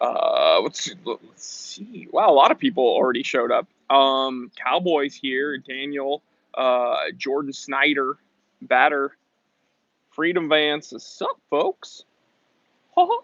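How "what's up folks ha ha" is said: squeaky, cartoon-like voice. Greeting viewers as they show up, the speaker uses a Mickey Mouse voice. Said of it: "That's my Mickey Mouse voice".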